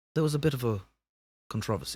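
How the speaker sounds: hushed, soft British wildlife-documentary narrator voice. Arguing over how to say a word, the speaker switches into a David Attenborough impression. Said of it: "I just got to do David Attenborough".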